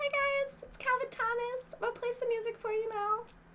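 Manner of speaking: voice pushed way up, extremely high-pitched. Reading out a commenter's words the way they imagine him, Calvin voice, extremely high-pitched. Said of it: "read all of your comments in an extremely high pitched voice".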